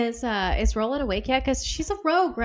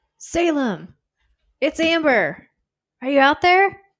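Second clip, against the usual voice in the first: high, raised calling out in a character voice; 5 semitones higher, 6 dB louder than usual. Asked to call out to Salem in character, in the character's voice. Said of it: "do it in your character's voice".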